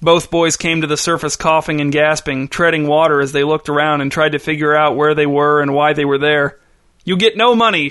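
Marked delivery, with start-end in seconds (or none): 7.0-7.9 male voice, pitched-up shout. A man points down at a boy treading water and shouts at him: shouted. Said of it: "shouted the man".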